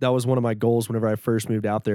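ordinary talk, nothing marked

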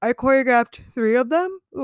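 talking through a yawn. Speaker recalling choreographing high school solos, yawning. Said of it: "I'm yawning, sorry".

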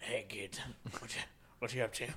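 put-on voice of a heavy smoker. Talking about a favourite character, the speaker imitates them in a smoker's voice. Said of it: "Nice smoker's voice".

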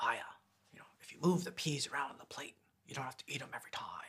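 very soft, quiet, leaned-in, confiding hush. Retelling an actor leaning over to a fellow actor, in Kingpin voice. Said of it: "he sort of leans over in his Kingpin voice".

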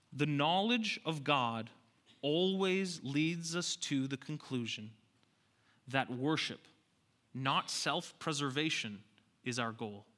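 slow, deliberate, emphasized delivery. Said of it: "I'm gonna say this slowly".

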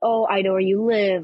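really creepy put-on eerie voice. Retelling a prank caller in a video scene, really creepy voice. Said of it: "he's talking in a really creepy voice".

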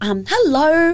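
put-on, mock-polite voice. Retelling going over to ask some guys something: put-on polite voice. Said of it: "That's my polite voice".

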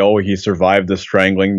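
ordinary talk, nothing marked

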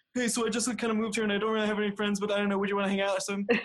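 very desperate, high pleading. Recalling asking this person to hang out after moving here, retelling a desperate ask. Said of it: "very desperately said".

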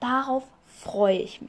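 whispered with sarcasm. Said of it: "Das war sarkastisch gemeint".

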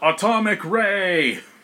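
high, yelled battle cry. Voicing a character who yells out his attack: yelling an attack name. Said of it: "He yells out".

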